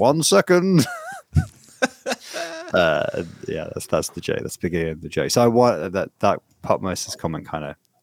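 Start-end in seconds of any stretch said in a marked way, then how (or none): 0.0-0.9 put-on gruff English accent. Telling a joke, the speaker voices the reply in a gruff English voice. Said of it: "this gruff English voice go like".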